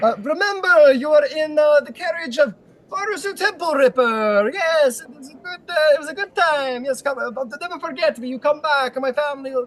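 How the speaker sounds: very high gnome voice, hollering. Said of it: "still yelling in the distance".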